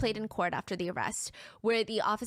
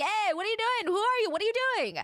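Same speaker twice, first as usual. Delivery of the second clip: very high-pitched screaming; 12 semitones higher, 4 dB louder than usual. Retelling police shouting at a man running upstairs: imitating police screaming. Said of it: "The police are screaming after him".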